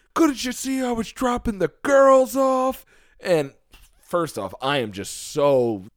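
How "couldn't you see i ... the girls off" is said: mock screaming, higher and louder. Retelling a parking fight, a guy at the window: imitating someone screaming. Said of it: "screaming at me".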